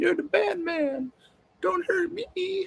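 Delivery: mocking, very high put-on woman's voice. Speaker parodies how women react, in a mocking woman's voice. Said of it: "I'm using that voice for women".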